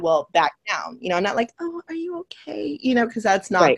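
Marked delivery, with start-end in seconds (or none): 1.6-2.8 mock sweet, gentle tone, very high, hushed, slow. Showing how you do not talk when confronting someone over an assault, put-on sweet tone. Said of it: "I have my like sweet tone".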